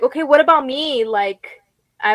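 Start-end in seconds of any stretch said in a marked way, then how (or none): 0.0-1.0 acted anxious pleading voice, much higher. Recalling lying with wires and an oxygen mask, retelling an anxious plea. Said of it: "I was getting so, like, anxious".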